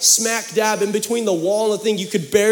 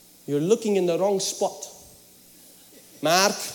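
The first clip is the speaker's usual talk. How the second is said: put-on Romanian accent; 2 semitones lower, 5 dB quieter than usual. A son retells his mother's words to him, imitating her romanian accent. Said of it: "she's Romanian, okay? Just bear with me".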